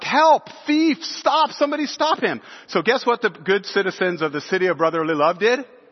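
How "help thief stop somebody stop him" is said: high-pitched yelling. Chasing a thief down the street, the speaker retells yelling for help. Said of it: "I'm yelling like".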